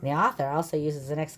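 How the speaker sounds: ordinary delivery, nothing marked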